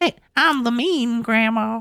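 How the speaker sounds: put-on accent from Memphis. Describing a grandmother from Memphis, the speaker imitates how she sounded. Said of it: "she still sounded like this".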